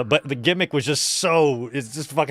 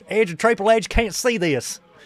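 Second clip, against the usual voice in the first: put-on Kentucky accent, raised pitch; 7 semitones higher than usual. Repeating a line just heard, imitating a Kentucky accent. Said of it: "The fucking accent".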